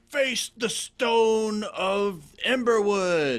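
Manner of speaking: piercing, very high-pitched, really loud shout. A player's character with maul raised, addressing him, shouting loudly. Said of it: "really loud now".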